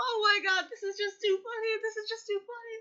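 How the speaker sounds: talking through nonstop laughter. Reacting to a video, laughing while talking. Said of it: "I just cannot stop laughing".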